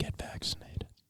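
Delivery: soft, emphatic presidential whisper. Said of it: "trying to emphasize, like our president does".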